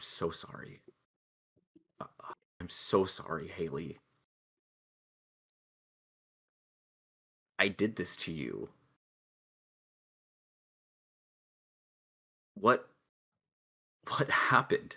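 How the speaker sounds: whispered, barely voiced, soft and breathy. Playing a character kneeling and holding her hand: whispering in character. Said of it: "I whisper".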